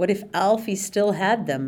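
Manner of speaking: ordinary delivery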